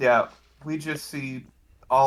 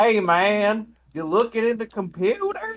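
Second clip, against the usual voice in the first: put-on southern country bumpkin accent, much higher; 9 semitones higher than usual. Speaker retelling how Edge talked to a guy at a hotel, imitating Edge's southern accent. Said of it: "talking to him like in a southern accent, like a country bumpkin voice".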